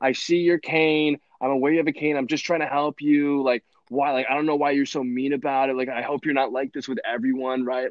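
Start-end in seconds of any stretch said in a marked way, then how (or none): 0.0-3.4 put-on heated, angry yelling back and forth. Speaker retells a woman yelling back at another woman with a cane, imitating someone yelling. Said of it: "just like yelling back and forth at this woman".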